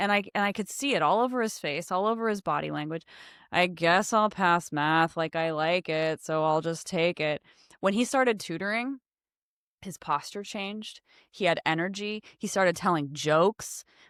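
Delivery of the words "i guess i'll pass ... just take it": mock flat monotone, much slower pace. Speaker recalls a depressed young man's words, imitating his monotone voice. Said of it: "he has kind of that monotone voice".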